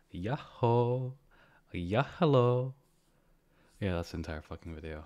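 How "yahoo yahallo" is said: very loud, high-pitched yell. Saying lines for a YouTube video, higher-pitched than normal voice. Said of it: "say those things in a higher pitched voice than normal".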